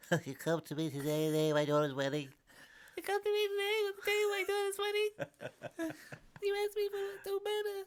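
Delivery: very high, swooping, squeaky tiny mob boss voice. Running the bit again after the interruption, as the tiniest Godfather. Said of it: "the tiniest Godfather".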